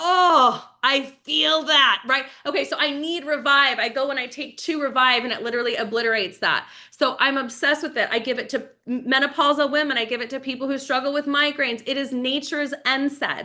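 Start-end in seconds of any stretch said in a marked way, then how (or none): 0.0-2.0 slow, loud groan of soreness. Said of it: "I'm like".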